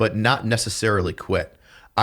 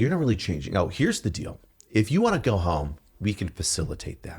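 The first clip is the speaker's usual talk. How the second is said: very kind, calm, patient-sounding manner; 4 dB quieter than usual. Retelling how they spoke to two trainees: retelling a kind, calm tone. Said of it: "very kind, very calm like this".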